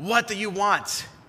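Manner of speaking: hostile, angry voice, loud and high. Narrating a story, a voice answers a knock at the castle door: angry voice. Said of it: "an angry voice answers".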